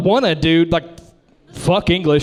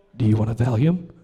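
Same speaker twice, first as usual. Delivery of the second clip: low, leaning-in half-whisper; 8 semitones lower, 4 dB quieter than usual. Speaker retells what the man asked him before the procedure, retelling a half-whisper. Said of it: "he kind of whispers up to me and he goes".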